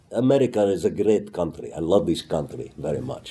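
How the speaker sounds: put-on Israeli-accented speech. Retelling his own audition line, delivered in an Israeli accent. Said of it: "I basically did an Israeli accent".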